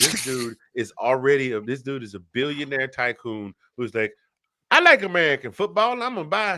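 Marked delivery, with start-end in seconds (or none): 4.7-6.6 put-on Texas accent, much higher, louder. Voicing a billionaire tycoon wrestler who likes american football, in a texas accent. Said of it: "make him sound like somebody from Texas".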